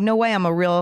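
ordinary talk

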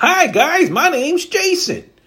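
put-on perky voice, very high, very slow, drawn out. Acting out a casting video intro: imitating a perky intro. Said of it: "you have to sound all perky".

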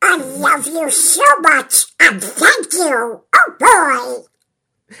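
high, loud quacking with stretched oh. A voice actor says what Donald would tell a retiring agent, in Donald Duck voice. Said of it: "Donald would want to say to Pat".

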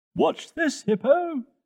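shouted, very high pitch. Reading a story, a character shouts back to the one calling him, shouting. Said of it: "Toto shouted back".

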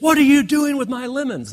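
play-acted screaming, shrill and pitched very high. Retelling a lemon fight when a kids' mother came out: imitating a mother screaming. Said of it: "started screaming at".

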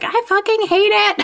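very high, all-out, full-lungs screaming. Recalling giving birth, the speaker retells what they told the midwives: retelling a scream. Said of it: "I scream at the top of my lungs".

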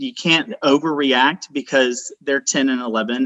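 ordinary delivery

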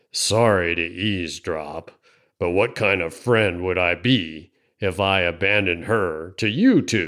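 low rasping voice. Narrator reading a story, Walt cutting in on a conversation, Walt's raspy mumble. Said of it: "[name] shuffled back into view, a yellow-toothed grin opening a ragged gap in his beard. / he mumbled. / rasped a voice out of the darkness. / [name] lurched out of the swing and would have done a fac".

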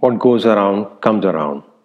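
ordinary delivery

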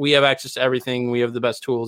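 ordinary delivery

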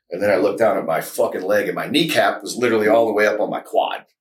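normal talking voice

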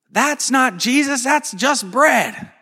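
put-on piercing, shrill, high-pitched child's yell. Retelling a sermon story of a four-year-old girl yelling during Mass: imitating a child yelling. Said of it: "just yells".

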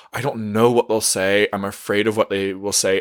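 ordinary talk

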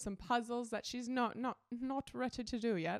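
slipping into a British accent. Describing puzzles bought for a child to grow into, slipping into a British accent. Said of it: "I got a British accent right there".

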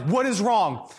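pressing, hurried tone. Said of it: "he switches into E M T mode".

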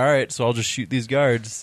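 ordinary talk

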